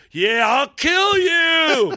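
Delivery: very high, very slow, drawn-out yell. Retelling what a man kept yelling back while walking away: imitating a man yelling back. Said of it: "he kept yelling back".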